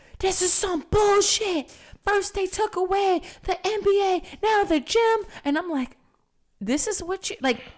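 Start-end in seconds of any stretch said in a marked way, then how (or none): 0.2-5.2 high-pitched screaming, ranting. Retelling what he yelled in the living room, retelling a scream. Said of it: "he's like screaming in the living room".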